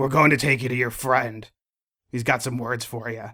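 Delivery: grizzled tough-guy character voice. In a role-play game, a captor tells the prisoners where they're going: grizzled, manly voice. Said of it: "that's a really grizzled and manly voice".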